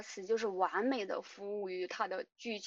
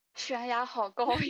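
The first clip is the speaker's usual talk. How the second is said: innocent, naive, puzzled, dazed wondering tone; 3 semitones higher, 4 dB louder than usual. Redoing a character's line to show how it sounded, naive, dazed 业务值 impression. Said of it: "那个语音语调好像啊".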